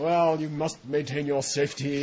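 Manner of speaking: put-on British accent, recorded announcer style delivery. Quoting a recorded airline safety announcer, in a british accent. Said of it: "with a British accent".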